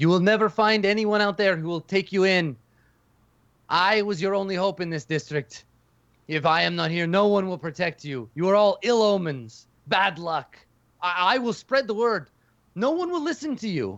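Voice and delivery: furious, high-pitched, angry yelling. Voicing a scared old man shouting after the departing party: angry shouting. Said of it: "shouting after you".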